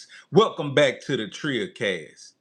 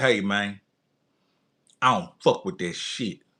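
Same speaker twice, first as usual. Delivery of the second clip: put-on young man voice, lower; 3 semitones lower than usual. Retelling how a young guy answered an offer: imitating the young guy's tone. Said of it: "In that tone".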